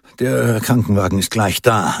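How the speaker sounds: plain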